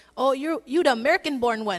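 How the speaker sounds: teasing, fake, put-on Filipino accent. Recalling the dad calling them to eat his cooking, in a fake Filipino accent. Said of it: "he would have his fake Filipino voice".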